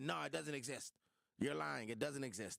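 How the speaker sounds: rough, creaky, raspy voice. Retelling a denial that a letter existed: Donald Trump voice. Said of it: "That's my Trump voice".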